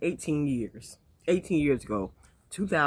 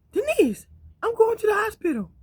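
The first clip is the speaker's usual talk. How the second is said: very high, pitched-up phone voice; 3 dB louder than usual. Retelling a phone call from the husband: imitating a high-pitched voice. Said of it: "high pitched".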